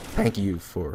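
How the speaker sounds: voice breaking, catching and cracking mid-phrase. Closing by thanking listeners for their support: voice cracking. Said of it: "voice crack there".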